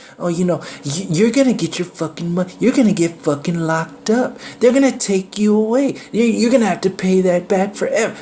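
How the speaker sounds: put-on very high, rushed, intimidating, threatening tone. Showing listeners what the slave mentality sounds like, imitating a tone that makes you submit. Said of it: "this is what it sounds like. You can hear the the tone".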